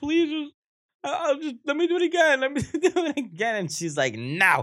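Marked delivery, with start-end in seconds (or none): 0.0-3.6 mock high-pitched, tearful crying, pleading. Retelling pleading with her in the car after being told to get out: retelling crying and begging. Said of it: "I'm crying over in a car".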